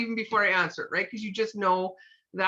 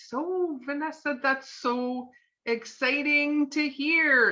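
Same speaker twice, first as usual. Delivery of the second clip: exaggerated, very drawn-out slow pace, pitched up; 5 semitones higher than usual. Showing how to answer an excited caller, Vanessa: over-the-top slow. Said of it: "almost like over the top slow".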